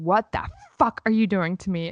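distressed, aggrieved, upset outburst. Telling a story, quoting what he said on coming out of the shower, imitating someone upset. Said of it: "he comes out and he is so upset".

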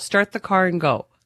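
ordinary delivery

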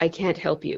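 put-on level, flat, expressionless deadpan. Retelling a dream where the medicine man answers: imitating a deadpan reply. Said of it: "deadpan and he says".

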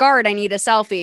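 normal talking voice

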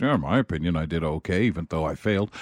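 low, soft, quiet, evasive muttering.

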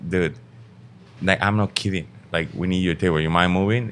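ordinary talk

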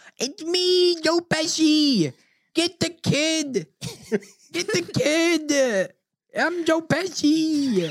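put-on very high, drawn-out "kid". Showing the others an impression one says sounds just like him, a spot-on Joe Pesci impression. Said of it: "it sounds just like him".

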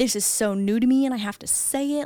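usual speaking voice

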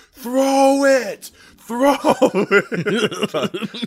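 very high, very slow, drawn-out holler. Retelling how a left tackle yelled at the quarterback: imitating someone yelling. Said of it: "he yells at the quarterback".

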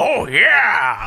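mascot voice, yeah drawn out. Quoting a movie trailer line: Kool-Aid Man voice. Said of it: "that was also the Kool-Aid, Kool-Aid Man there".

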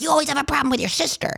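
put-on sharp, angry snap, pitched a bit high. Retelling how mom reacted to hearing about hurt feelings: imitating mom snapping. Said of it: "my mom really snapped".

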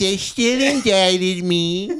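high, dragged-out drawling voice. Imitating how Trump said he was indicted: Trump impression. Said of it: "he's starting to sound like Carol Channing".

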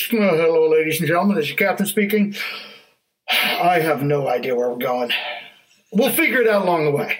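airline pilot cabin intercom announcement voice. Picturing a pilot at the end of the runway, airline pilot announcement. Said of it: "the pilot gets on and goes".

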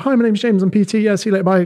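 rapid-fire, high, chirpy, rattled-off delivery.

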